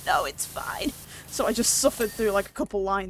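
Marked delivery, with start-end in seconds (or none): 0.0-0.9 strangled, squeaky, froggy croaking voice. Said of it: "just squeaking from the back, sounding like a frog being trodden on".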